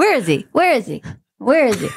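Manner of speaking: restless, prowling cat voice. Joking in a group about Trump as a cat; cat impression. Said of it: "You do an excellent cat impression".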